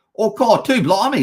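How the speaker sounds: over-the-top, exaggerated put-on Australian accent. Answering a chat viewer who loves Aussie accents, in a put-on Aussie accent. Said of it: "I love Aussie accent".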